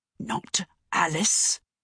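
harsh words hissed through teeth. At the breakfast table, the father cuts in with a harsh hiss through teeth. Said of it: "Papa hissed through his teeth, and his voice was so harsh".

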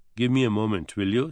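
ordinary talk

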